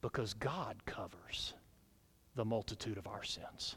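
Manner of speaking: soft, hushed, unvoiced whisper.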